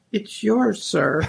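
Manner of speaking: put-on meek little voice. Telling an anecdote, voicing the reply to a shouted order, retelling a meek little voice. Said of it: "a little meek voice comes back".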